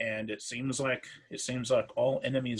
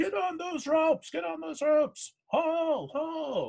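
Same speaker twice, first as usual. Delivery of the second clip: shrill, very high, barked shouting; 3 dB louder than usual. Voicing a lieutenant calling up from below to the crew, Rusa shouting up. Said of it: "shout up at you".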